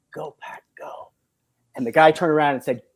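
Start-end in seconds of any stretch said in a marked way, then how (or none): 0.1-1.1 whispered, very quiet, barely audible. Retelling how a businessman spoke to a stranger: imitating someone saying it very quietly. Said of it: "he very quietly said".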